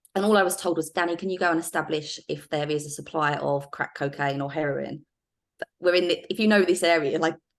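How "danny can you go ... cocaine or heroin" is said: ordinary delivery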